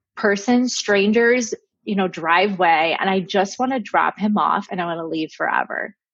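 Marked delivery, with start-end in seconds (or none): none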